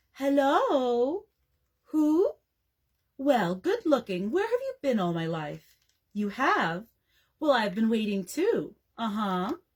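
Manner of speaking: sweet, sugary, honeyed voice, "hello" drawn out. Reading a story aloud, a sister answering the telephone: honeyed voice. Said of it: "in a honeyed voice".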